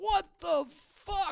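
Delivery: very high-pitched shriek, acted out. Recounting screaming at the tv while watching a show, retelling a scream. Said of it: "I literally started screaming at my T V".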